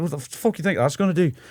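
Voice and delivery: put-on high, offended, drunken Scottish outburst. Retelling how a drunk man in a bar confronted a friend: imitating an offended drunk scottish man. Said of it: "a drunk Scottish guy who saw him use hand sanitizer and got, like, offended".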